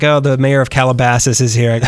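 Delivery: plain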